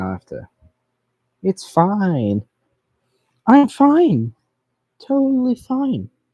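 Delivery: high-pitched voice. Reassuring self after going too far with a build: high-pitched voice. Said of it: "I don't know why my voice is all high-pitched like this".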